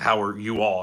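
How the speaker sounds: ordinary talk, nothing marked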